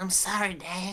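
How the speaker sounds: put-on sheepish cartoon boy voice. Apologizing to Dad: Bobby Hill voice. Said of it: "that Bobby voice".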